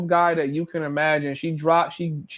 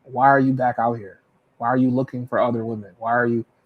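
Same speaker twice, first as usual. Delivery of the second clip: put-on jealous, accusing woman's voice, lower pitch; 7 semitones lower than usual. Retelling what a woman said on catching the speaker outside: imitating a jealous woman. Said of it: "and she's jealous".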